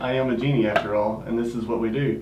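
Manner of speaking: ordinary talk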